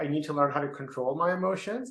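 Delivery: ordinary talk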